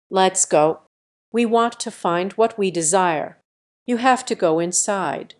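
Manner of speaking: ordinary delivery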